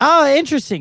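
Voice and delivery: big, loud, stagey, projected theatrical gush. Retelling a loud passenger's remark on a plane: imitating loud theatrical woman. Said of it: "And she was so loud".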